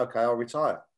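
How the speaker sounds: ordinary delivery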